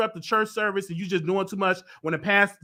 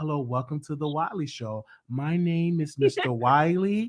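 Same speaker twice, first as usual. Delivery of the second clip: put-on proper voice, lower; 5 semitones lower, 4 dB quieter than usual. Retelling his early YouTube intro, imitating his old proper voice. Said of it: "I used to be all proper".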